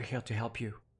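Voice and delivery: soft whisper. Speaking in character to a bound unicorn while invisible: whispering. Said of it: "I'll just whisper to it".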